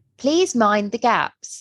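English accent in station-announcer style. Discussing announcement voices, the speaker demonstrates the tube line in an English announcer accent. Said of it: "they speak with an English accent".

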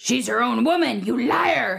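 gravelly, creaky character voice. Asked for an impression of a character, the speaker does an impression of a character. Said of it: "Do you want to give me an impression of a character?".

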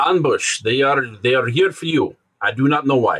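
put-on Russian accent. Retelling what a man told the group, in his Russian accent. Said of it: "in his Russian accent".

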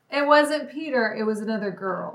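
normal talking voice

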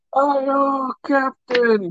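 put-on very high, loud, drunken screaming. Retelling how a drunk man on the deck kept yelling, retelling a drunk scream. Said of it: "kept screaming while".

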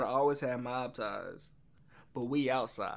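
ordinary talk

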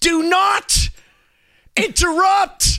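angry scolding. Retelling how someone scolded them for interrupting: imitating an angry rebuke. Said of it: "they were so mad at me".

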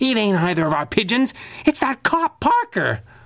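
hissed, very high pitch, swooping. The flying squirrel reports to her boss over the radio ring; hissed. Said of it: "she hissed into the radio ring".

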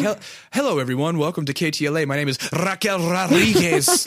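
high, swooping, sing-song news anchor voice. Teasing the other speaker about how they'd sound: mock news anchor voice. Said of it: "if you were a newscaster, you'd be like".

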